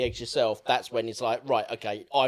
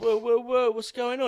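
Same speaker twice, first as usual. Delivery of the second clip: put-on calm voice, much higher; 12 semitones higher, 3 dB louder than usual. Retelling a scene where Jake the Muss walks in on a shouting mother, mock-chill. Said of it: "He comes in sort of all chill".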